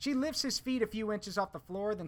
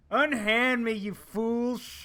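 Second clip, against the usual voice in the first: put-on very loud, very slow, booming, drawn-out drunken roar; 4 semitones higher, 8 dB louder than usual. Narrator voicing a drunk troll dragged down a hallway by guards, drunken troll roar. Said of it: "The troll's voice comes out in an inebriated roar".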